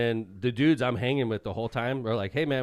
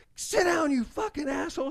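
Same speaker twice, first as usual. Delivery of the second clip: acted-out furious outburst, pitched very high. Retelling a story, the speaker quotes a woman in a group going off on a man: imitating an angry outburst. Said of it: "She goes off on him".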